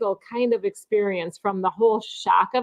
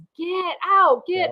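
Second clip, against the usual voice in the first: high-pitched scream at the top of the lungs; 9 semitones higher than usual. Telling of waking on a cruise to Anthony yelling, imitating Anthony screaming. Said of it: "He's sitting there screaming".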